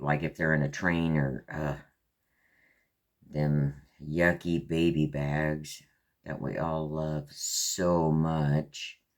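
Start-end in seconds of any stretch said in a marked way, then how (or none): 3.3-8.9 heavy dripping sarcasm, very slow and drawn out. Describing the baby bags while sorting kits: dripping sarcasm. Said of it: "Hear the sarcasm dripping out of that statement".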